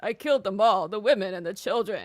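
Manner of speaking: put-on flat emotionless voice. Mocking an actor's line delivery: flat emotionless Hayden Christensen impression. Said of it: "No emotion, talks like this".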